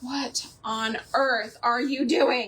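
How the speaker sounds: put-on irritated voice. Retelling someone's reaction to messy painting, imitating someone irritated. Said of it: "so irritated with me".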